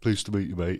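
everyday, full-on matey bloke voice. Speaker retells a mate's greeting that had everyone laughing, Danny's blokey voice. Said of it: "in his most blokey voice".

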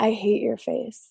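soft, kind, sugary flirtatious tone. Showing how a woman can say anything to men; kind, flirty voice. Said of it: "in like a kind, flirty voice".

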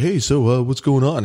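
southern California surfer-dude voice. Describing a doctor she shouldn't have gone with, quoting his greeting, southern california surfer voice. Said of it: "He seemed like a surfer guy from Southern California".

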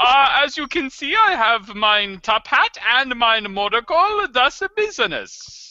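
put-on German accent. Players voicing a business person character from the German-Luxembourg border, fake German accent. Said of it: "I thought it was his German accent".

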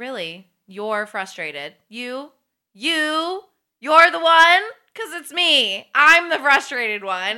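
mock-sarcastic, indignant. Speaker acts out a woman answering a man who says he's frustrated, acting out her sarcasm. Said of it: "use her sarcasm on him".

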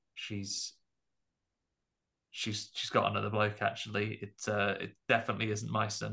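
low aside, mumbled under the breath. Retelling a film scene where the husband speaks: imitating a mutter. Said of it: "And then he does mutter".

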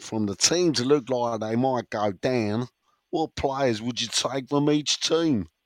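accent from Gillingham. Reading a question out to Dan, in a Gillingham accent. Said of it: "That's my best Gillingham accent".

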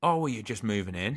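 mock confused, puzzled tone. Retelling what a neighbour said to them, imitating him sounding really confused. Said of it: "really confused".

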